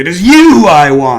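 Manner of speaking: calling out loudly. Telling a story, the woman's voice from under the earth, crying out. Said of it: "she cries out".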